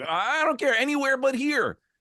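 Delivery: put-on high, panicky, freaked-out girl voice. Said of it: "and she's freaking out".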